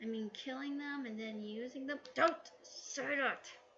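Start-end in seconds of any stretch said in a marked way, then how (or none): 2.1-3.5 raised voice, spoken through gritted, clenched teeth. A character answers a lady's joke about his name, through gritted teeth. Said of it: "taxidermy said with gritted teeth".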